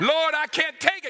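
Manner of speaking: put-on very high, pleading cry. Retelling how a suffering man prayed to God: retelling a cry out in prayer. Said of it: "he's praying and he's crying out".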